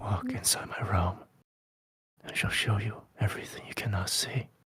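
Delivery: very soft, hushed, pleading whisper. Voicing a figure who invites the listener into his realm: whispered plea. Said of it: "delivered in the form of a whisper".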